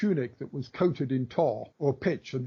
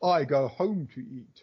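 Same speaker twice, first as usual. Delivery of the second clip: rather lofty, grand, slow and drawn-out delivery. Retelling an anecdote of Emperor Augustus at the races, imitating Augustus's lofty voice. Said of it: "in a rather lofty voice".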